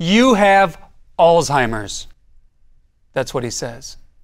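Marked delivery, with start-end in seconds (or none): 0.0-2.1 put-on loud, booming, boisterous delivery. Retelling what the doctor said to them, retelling a loud, boisterous voice. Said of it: "he says with this loud voice, boisterous".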